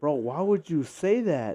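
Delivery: loud, drawn-out, mock-angry, aggrieved complaint. Retelling a reply to a cousin's movie spoiler, imitating own angry words. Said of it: "And I was so mad".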